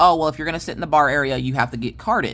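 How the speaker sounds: ordinary talk, nothing marked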